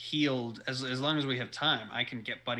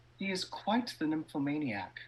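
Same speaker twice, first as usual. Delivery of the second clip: whispering aside; 4 semitones higher than usual. As a role-play character speaking privately to another character, whispering. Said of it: "Dionysus is going to whisper to Micah".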